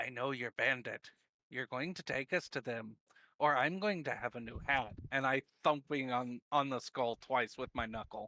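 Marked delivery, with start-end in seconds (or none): 0.0-4.9 very quiet, threatening whisper. Threatening a bandit in character while on his shoulders: whispering very quietly. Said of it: "I just whisper very quietly".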